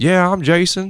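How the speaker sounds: high, slow Southern drawl.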